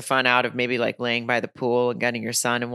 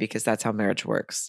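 whisper, much quieter, lower; 3 semitones lower, 5 dB quieter than usual. Speaker whispering because her husband is in the other room. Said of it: "as I whisper that".

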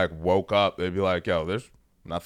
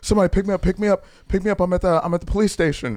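put-on hyperventilating, much higher pitch; 11 semitones higher, 6 dB louder than usual. Retelling the brother's phone call from the police station, imitating Steve hyperventilating. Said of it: "he's like fucking hyperventilating".

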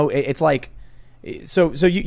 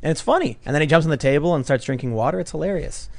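ordinary delivery

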